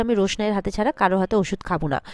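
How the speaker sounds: ordinary delivery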